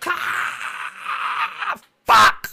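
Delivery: sudden, panicked cry. Voicing a character whose parachute cord fails: screaming in panic. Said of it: "She starts to scream".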